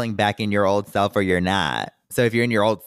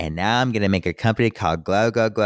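ordinary talk

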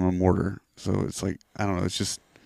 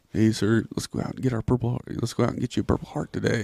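joking tone, faster; 3 semitones higher than usual. Speaker retelling what they said to their sir before a big mission: retelling a joking remark. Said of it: "And I was like just jokingly".

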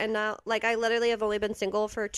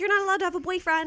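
mock very high, shrill yelling mother voice; 9 semitones higher than usual. Recalling her mom yelling at her at twelve, retelling mom yelling. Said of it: "my mom literally yelling at me".

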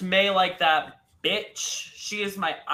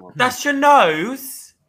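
bad put-on British voice, higher and louder; 8 semitones higher, 11 dB louder than usual. Doing a judge's line to a queen: Michelle Visage impression. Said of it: "That's my Michelle Visage impression".

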